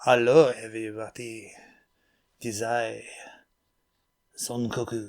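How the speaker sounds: put-on French-like accent. After a coworker disliked the low voice, greeting everyone in a fake French-ish accent. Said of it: "Maybe I should do my my my Frenish accent".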